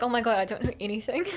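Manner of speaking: ordinary delivery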